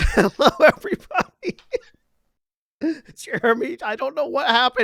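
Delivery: talking through constant, uncontrollable laughter. Greeting everyone at the start of the game: laughing while talking. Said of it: "you started laughing and I can't stop now".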